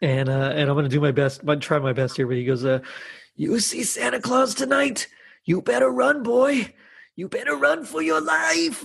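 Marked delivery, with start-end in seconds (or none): 3.4-8.9 put-on very high, breathy old grandpa voice. Recalling a horror film scene that scared them: Silent Night, Deadly Night grandpa voice. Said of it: "It's so high-pitched and breathy".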